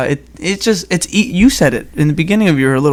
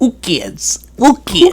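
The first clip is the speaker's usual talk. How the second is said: put-on heavy Spanish accent, very high, swooping; 9 semitones higher than usual. Imitating a grandmother repeating a phrase she was taught, heavy Spanish accent.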